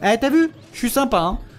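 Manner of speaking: smug, gloating tone, pitched high.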